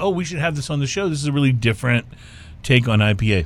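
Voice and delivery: plain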